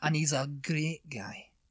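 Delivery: Glasgow Scottish accent. Answering a request to hear a Scottish accent: Glasgow Scottish accent. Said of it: "let's hear your Scottish accent".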